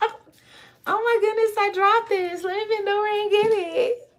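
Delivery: fake surprise. Acting out dropping something on purpose to bend over: mock surprise at dropping something. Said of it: "wanna do that on purpose".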